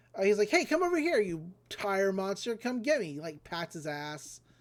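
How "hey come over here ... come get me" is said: goading, taunting Japanese-style hero voice. Retelling how a hero lures a monster to chase him: retelling a taunt. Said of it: "very Japanese kind of, uh, taunting".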